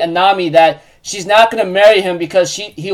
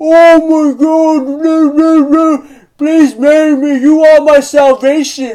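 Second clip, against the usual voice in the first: put-on mocking voice, higher and louder; 8 semitones higher, 4 dB louder than usual. Retelling how Pudding mocks Sanji: imitating Pudding mocking. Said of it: "she even says it in a mocking way".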